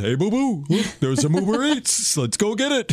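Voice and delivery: high-pitched, sing-song delivery. Joking about a bear stealing a delivery order: Yogi Bear voice. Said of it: "Now instead he goes".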